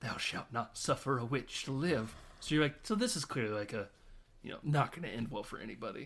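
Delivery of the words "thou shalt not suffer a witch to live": stage whisper with voice. Retelling a movie scene where a mother whispers to herself: imitating a whisper. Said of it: "whisper to herself".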